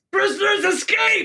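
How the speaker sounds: shrill, high, shouted alarm cry. A guard character alerts the other guards about escaping prisoners, shouting an alarm. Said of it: "He shouts".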